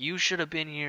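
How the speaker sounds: mock angry screaming outburst, only hinted at. Retelling a furious grandfather's words at the door: imitating someone screaming. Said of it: "screaming at me".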